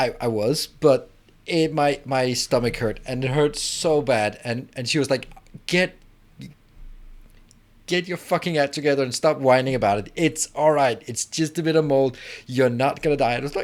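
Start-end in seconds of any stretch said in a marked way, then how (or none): 5.7-13.3 harsh, fed-up, angry scolding tone. Retelling the mother's reply to the stomach complaints, imitating an angry mom. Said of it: "my mom got really pissed at me".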